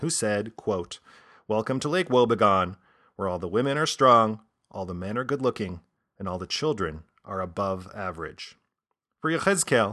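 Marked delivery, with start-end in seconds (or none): none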